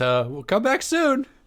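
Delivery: tripping over words, very high. Game master voicing the blushing gnome as the players walk out: stammering, flustered. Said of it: "he's like he stammers".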